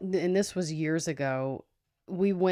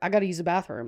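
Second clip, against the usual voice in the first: mumbled, barely opening the mouth. Retelling how a man suddenly walked off, imitating his mumble. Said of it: "he just mumbles like".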